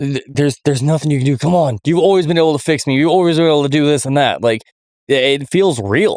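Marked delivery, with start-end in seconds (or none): 0.0-4.4 fast, broken-down voice full of desperation. Speaker acts out a game character breaking down over dying: imitating desperate pleading. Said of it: "You can hear the desperation".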